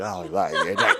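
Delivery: mock very low mumble, consonants smeared away. Speaker imitates a straight guy offering a woman a drink, mock slurred speech. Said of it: "straight guys like don't know the meaning of a consonant".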